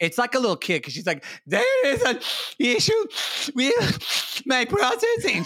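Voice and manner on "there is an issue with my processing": mock very high, drawn-out, snivelly crying. Act out how she, sick and tired, acted like a little kid, imitating someone sniveling. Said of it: "sniveling and snot's coming out of her nose".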